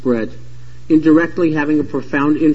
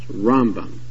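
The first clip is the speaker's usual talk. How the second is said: Rambam, stress on first syllable ram; 5 semitones lower than usual. Telling Maimonides from Nachmanides by name: stress on first syllable of Rambam. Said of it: "has the stress on the first syllable".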